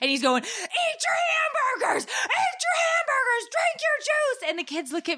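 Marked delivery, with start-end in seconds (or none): 0.4-4.5 put-on very high, shrill shouting. Mother retells a Turner and Hooch scene to listeners, retelling Tom Hanks yelling. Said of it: "he's yelling at Hooch".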